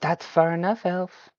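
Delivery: high, otherworldly fae creature voice. Voicing a fae creature who stops the elf: fae creature voice. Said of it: "Do I recognize this type of voice".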